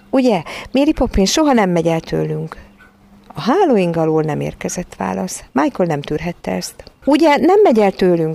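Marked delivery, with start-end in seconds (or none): 7.0-8.3 anxious, worried, high, raised shout. Michael calls out to Mary Poppins, who gives no answer, in an anxious shout. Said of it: "kiáltotta aggódó hangon".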